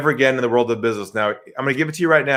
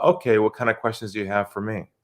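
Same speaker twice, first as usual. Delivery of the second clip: calm, unguarded, lowered quiet voice; 4 semitones lower, 6 dB quieter than usual. Retelling what a man said to them, retelling his lowered voice. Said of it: "He lowers his voice and he says to me".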